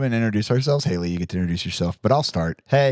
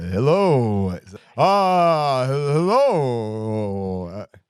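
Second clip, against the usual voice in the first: creepy, very slow, spooky intoning. Doing the welcome for the show's Halloween episode, in a spooky voice. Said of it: "in a spooky voice".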